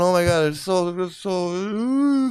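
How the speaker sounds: very slow, drawn-out giggling gush. Pretending to giggle over a story about Medusa: mock giggling over a story. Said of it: "giggling over a story about Medusa and going".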